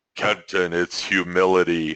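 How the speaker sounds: low, deep, stern voice. Speaker recalls a spirit guide answering his question in the car, imitating a deep, stern voice. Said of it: "in a really deep, stern voice goes".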